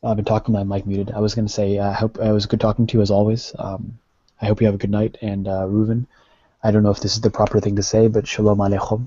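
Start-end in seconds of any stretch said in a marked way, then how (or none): 8.1-9.1 Arabic-accented pronunciation. Saying goodbye with a Hebrew greeting: Arabic accent. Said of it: "I'm saying it with an Arabic accent".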